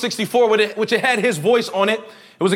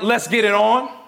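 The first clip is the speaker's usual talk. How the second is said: ordinary talk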